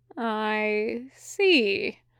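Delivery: slow, drawn out, unhurried delivery. Mephistopheles answers Sandalphon after shaking his hand, said slowly. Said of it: "Mephistopheles said slowly".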